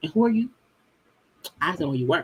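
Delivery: put-on snooty, condescending, dismissive tone. Imitating Wendy talking to Mia's friend Jacqueline: imitating Wendy's condescending tone. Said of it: "that can be condescending".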